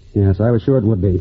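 ordinary delivery

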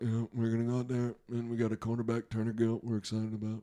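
low, flat, level droning monotone. Mocking how coaches sound behind the podium, the speaker does a monotone Tom Osborne impression. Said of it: "he's a little monotone, he's a little boring".

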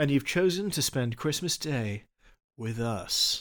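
late-night radio dj voice. Co-host welcoming listeners on christmas day, in a late-night radio voice. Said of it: "We should just talk like the late night radio voice".

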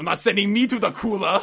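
very loud, high-pitched action-star yell. Quoting a line from the same movie scene, Arnie impression. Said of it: "I'll go with one from the same scene".

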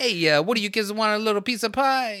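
put-on Italian accent, pitched very high. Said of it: "[name] had an Italian accent when he was behind closed doors".

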